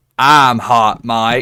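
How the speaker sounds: put-on loud, deepest country-fried accent. Retelling a voice heard over the mic, doing Hot Mike's deep country accent. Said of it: "this country fried accent".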